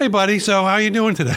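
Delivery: happy bright voice. Greeting the other speaker and asking how they are, sounding happy. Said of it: "You sound happy".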